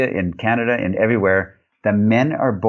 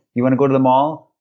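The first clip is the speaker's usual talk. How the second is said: lifted end on "mall"; 3 semitones higher than usual. Showing how sentences go up at the end: rise on mall. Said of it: "It goes up at the end".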